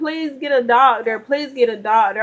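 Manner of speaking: urgent, desperate pleading cry, over and over. Recounting a painful, frightening experience, acting out her earlier pleas for help. Retelling desperate pleading. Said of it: "It got to the point where I'm screaming".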